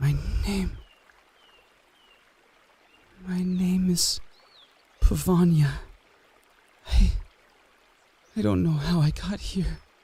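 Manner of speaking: frightened, halting, high-pitched, scared voice. Voicing a character asked her name after begging for help: scared. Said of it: "I'm so scared".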